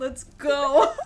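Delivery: cracking up, high and loud laughing outburst.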